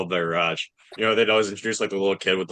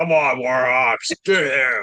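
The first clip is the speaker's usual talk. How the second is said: very slow, high, stretched-out yell; 5 semitones higher, 4 dB louder than usual. Retelling a fan's yell from the stands: imitating a fan yelling.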